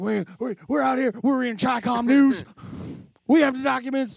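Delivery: high-pitched stammering rant, tripping over the words. Doing an impression after being asked, during a conspiracy episode: Alex Jones impression. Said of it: "can you do the impression?".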